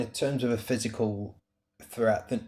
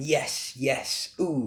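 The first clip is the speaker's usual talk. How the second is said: put-on elderly man's voice, encouraging tone; 3 semitones higher than usual. Retelling sounds an old man made behind the rower: imitating an old man at the gym. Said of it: "And he's going".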